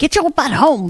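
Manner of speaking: usual speaking voice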